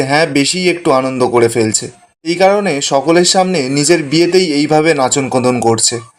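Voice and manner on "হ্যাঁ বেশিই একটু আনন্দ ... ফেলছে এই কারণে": usual speaking voice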